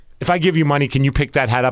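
plain

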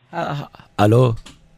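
fake Dubai official accent, halting delivery. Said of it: "this is, uh, security, uh, Ahmed Al-Wawari".

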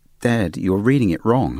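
firm, stern, disapproving tone. Retelling how the daughter stopped the reading: imitating a stern reprimand. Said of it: "sternly and said".

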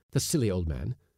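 ordinary delivery, nothing marked

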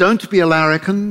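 put-on English-accented voice. Retelling what a mother would say: imitating mother's Upper North Shore British accent. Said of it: "in her impeccable Upper North Shore British imitation accent".

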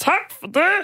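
affected, odd, put-on dumpling-in-the-throat voice. Speaker imitates a man who borrowed a phone from them: imitating an affected voice. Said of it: "han talte med sådan en, en knødelstemme".

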